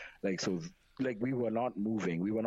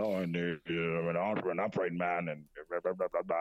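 put-on old man voice, much lower, slower; 3 semitones lower than usual.

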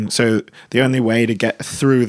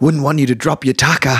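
put-on thick Australian accent, heavy working-man voice; 3 semitones higher than usual. Retelling what a gentlemanly husband said to them: thick aussie tradie voice. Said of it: "he's got this fucking thick like Aussie tradie voice".

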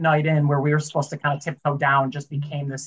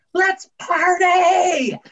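mock full-throated top-of-the-lungs scream, very high-pitched; 5 dB louder than usual. Retelling a kid running into the house: imitating someone screaming. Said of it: "just screamed at the top of his lungs".

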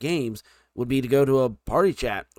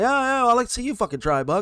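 put-on teasing voice, pitched up, through laughter; 11 semitones higher, 4 dB louder than usual. Retelling a game with teammates, the speaker imitates Sternsy laughing at him. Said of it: "Sternsy's over there laughing like".

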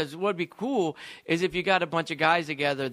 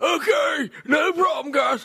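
put-on very high, slow, drawn-out country good-old-boy voice; 11 semitones higher, 6 dB louder than usual. Answering how a tire stacker sounded: imitating Bubba. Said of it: "kinda like that".

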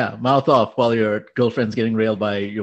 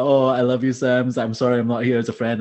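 put-on apologetic voice. Retelling a friend's apology to another person: imitating Connor. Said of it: "Connor was, like, out here saying".

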